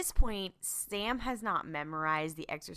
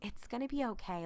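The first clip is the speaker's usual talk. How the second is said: higher-pitched, reassuring, nice-guy voice. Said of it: "puts on his, like, nice Sam voice".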